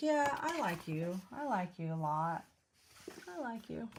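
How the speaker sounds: mock-sincere, sarcastic sing-song. Showing a sarcastic way to say it to your husband. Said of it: "be sarcastic to your husband and be like".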